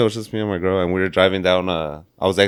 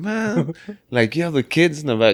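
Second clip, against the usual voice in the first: high-pitched hollered yell; 8 semitones higher than usual. Retelling a road rage incident at another driver: imitating own past yelling. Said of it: "I'm yelling".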